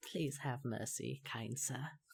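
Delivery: put-on soft, elderly woman's voice. Narrator voices one of the Kenku as it is pulled away, in an old lady's voice. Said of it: "you hear in an old lady's voice one of the Kenku say".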